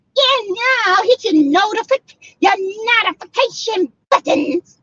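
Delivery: witchy voice pitched very high. A YouTube host talking to viewers in a Wicked Witch of the West voice. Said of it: "Sounding like the wicked witch of the west".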